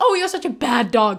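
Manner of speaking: very loud, sweet, loving tone. Talking to a dog in a really lovely tone: sweet, lovely tone. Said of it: "in a really lovely tone".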